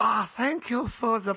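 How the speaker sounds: botched fake Chinese accent sliding into German. Ending the episode by thanking the others: bad fake Chinese-German accent. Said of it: "I don't know what accent that was".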